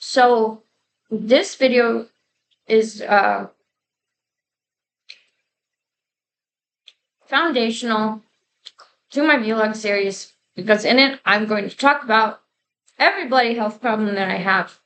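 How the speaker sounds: talking while eating, mouth full. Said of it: "Excuse me for talking with my mouth full".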